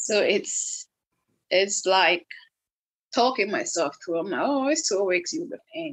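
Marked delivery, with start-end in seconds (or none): none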